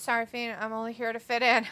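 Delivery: ordinary delivery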